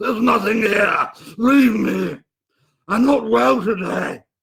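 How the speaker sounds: high, choked, gurgling voice. Answering his brother's plea to cast it out, he speaks: choking, gurgling voice. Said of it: "a choking, gurgling voice uttered words".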